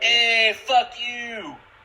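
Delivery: put-on Bronx tough-guy accent, very high, loud and shrill. Players discuss a character's Italian accent, and one demonstrates a Bronx accent. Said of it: "like Bronx".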